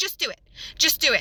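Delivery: curt, high, bratty, snotty snap. Retelling how she snapped at them in front of the customer, mocking her snotty tone. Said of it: "with this really just like snotty tone".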